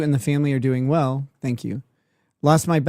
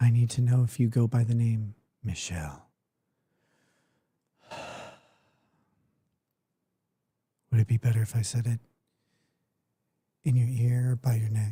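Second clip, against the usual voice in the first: soft, hushed, close half-whisper; 3 semitones lower, 6 dB quieter than usual. Mocking an attorney who cannot be heard, joking: mock half-whispering. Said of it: "I am whispering just to you".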